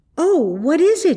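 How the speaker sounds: sudden, high, startled outcry. Marjorie, feeling a sharp nip on the back of her neck, is crying out at a nip. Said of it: "she cried".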